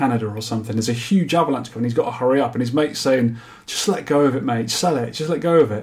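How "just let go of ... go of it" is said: ordinary delivery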